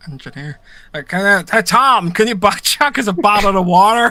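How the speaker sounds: loud put-on Northern Irish Belfast accent. Asked for a demonstration, the speaker gives it a go: Belfast accent. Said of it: "in a Belfast accent".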